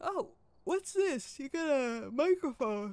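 words stretched, said mid-yawn. Talking to a companion on camera, yawning while speaking. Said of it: "Sorry, I yawned".

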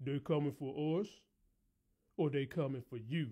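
deep, soft, mannish woman's voice. Tell your listeners how Rock answered him as they went through the pictures, imitating Rock's mannish voice. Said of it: "in her sexy physique but man-ass voice".

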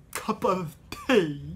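heavy lisp with the tongue pushed out. Showing how to build a Hatter voice, in a lisping Hatter voice. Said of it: "throw in a bigger lisp, and push out your tongue a lot".

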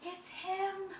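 very high little whimpering cry. Narrating a story, voicing the elephant as the animals cover their eyes: whimpering. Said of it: "whimpered the elephant".

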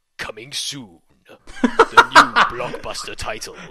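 booming, dramatic, very slow, drawn-out game-trailer narrator. Doing an impression of a video game trailer: video game trailer voice. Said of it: "here's my impression of the video game trailer voice".

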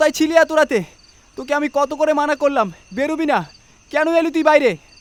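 out of breath. Reading Shubho's question to Shakti, panting. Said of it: "শুভ হাঁপাতে হাঁপাতে বলে উঠল".

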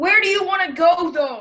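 loud shouting. In a back-and-forth about food, asking the other where to go, yelling. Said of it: "Why are you yelling?".

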